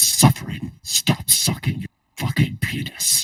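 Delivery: breathy, whispered villain character voice. Saying the line after another speaker asks for the Vader voice: Darth Vader voice. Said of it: "You should do the Vader voice".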